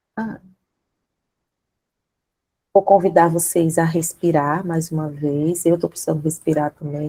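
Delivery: emotional, choked-up voice. Speaker inviting the audience to breathe again, still moved, voice choked with emotion. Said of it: "a voz embargada".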